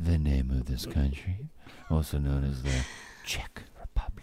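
acted, suggestive, soft and saucy murmur. Teasing someone about how he said a line, imitating his saucy delivery. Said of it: "Why are you saying it in such a saucy manner?".

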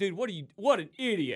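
mock yelling. Describing yelling as if he were the truck driver; retelling a yell. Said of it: "I'm yelling like".

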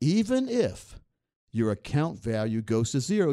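slow, measured, each word deliberately spaced out. Repeating the previous sentence for Thomas: slow and deliberate. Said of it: "I have to say that slowly".

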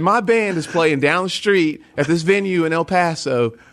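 put-on high, slow, laid-on-thick South Carolina accent. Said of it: "I lay it on thick".

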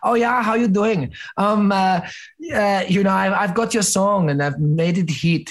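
put-on German accent. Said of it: "That's not a Chinese accent".

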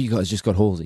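ordinary delivery

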